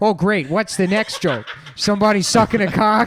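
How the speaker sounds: put-on Midwestern regular-guy accent. Speaker imagines two Midwestern podcast guys reacting, doing a Midwestern guys impression. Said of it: "those two Midwestern guys being like".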